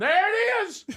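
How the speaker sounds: shrill, very high, loud shout. Recounting a moment in the car with a woman, retelling a shout. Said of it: "I just start shouting".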